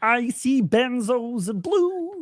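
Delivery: high, slow puppet-style voice. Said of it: "My Kermit the Frog sounds like".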